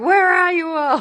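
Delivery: put-on very high-pitched, shrill, boozy drunken voice. Retelling a scene with a mum six glasses of wine deep: imitating a drunk mum. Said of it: "six glasses of wine deep, twenty cigarettes deep".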